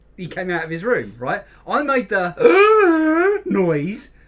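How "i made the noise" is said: high, loud, slow gasp like a dying creature. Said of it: "a dying Wookiee".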